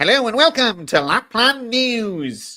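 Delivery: high elf newsreader voice, "news" stretched out. Presenting Lapland News, trying to sound like an elf. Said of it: "I'm going to try and sound like an elf".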